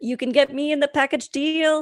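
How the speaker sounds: silly, high-pitched, goofy put-on voice. Explaining film licensing, acting out the film pitching itself in a silly voice. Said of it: "I just summed up impact distribution in like a silly voice".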